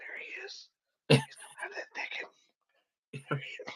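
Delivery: breathy, hushed TV presenter whisper. Describing the typical hunting-show narration he never wanted, hushed whisper. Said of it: "the typical whisper, like".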